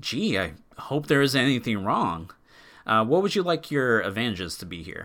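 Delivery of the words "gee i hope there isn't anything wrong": swooping, sarcastic, seeing-right-through-it tone. Voicing a character who sees through a lie: sarcastic question. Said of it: "asking with a cocked brow and kind of sarcastically".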